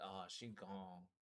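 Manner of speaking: mock barely audible, hushed, stunned sad disbelief. Repeating a paramedic's words: imitating sad disbelief. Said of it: "the sadness and just, like, the disbelief".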